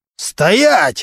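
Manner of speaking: high pitch. A prosecutor yells at a captain who is about to leave: yelling. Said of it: "заорал прокурор".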